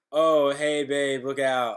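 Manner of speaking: loud, careless, easy-toned call. Retelling a wrestling segment, quoting the wrestler's warning: Dolph Ziggler's careless warning voice. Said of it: "that exact voice".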